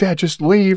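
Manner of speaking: put-on crying, high, tearful pleading voice. Retelling how a daughter in the back seat begged to leave: imitating his crying daughter.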